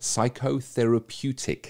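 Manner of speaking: slow, careful psychotherapeutic. Getting a big word right on the podcast: said slowly. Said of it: "I'm gonna have to say this slowly".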